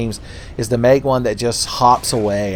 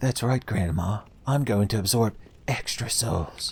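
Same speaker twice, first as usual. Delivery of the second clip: soft, low-key, edgy video-game hero voice; 8 dB quieter than usual. A gamer voices the player's reaction to an upgraded ring, in an edgy Link voice. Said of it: "my edgy Link uh, voice".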